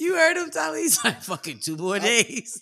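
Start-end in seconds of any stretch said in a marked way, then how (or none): 1.2-2.6 mock fed-up, harried, stressed grumbling. Imitating a friend grumbling that rent is due: imitating stressed grumbling. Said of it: "It was the way he said it".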